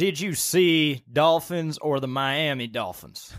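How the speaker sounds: very slow, put-on Southern drawl. Joking with a guest back from Florida about dolphins: put-on southern accent. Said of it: "I don't know why a southern accent felt right".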